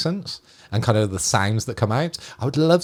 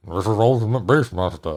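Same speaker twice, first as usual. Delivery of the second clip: put-on slurred, mumbled movie-star voice; 3 semitones lower than usual. Recalling him introducing a show, in a Sylvester Stallone accent. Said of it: "that is my accent for Sylvester Stallone".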